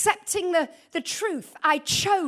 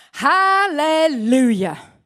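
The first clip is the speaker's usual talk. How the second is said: put-on sarcastic cheer, loud; 2 semitones lower, 7 dB louder than usual. Retelling the husband's reaction after a call with a pastor, retelling a sarcastic hallelujah. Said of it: "one of those real sarcastic ones".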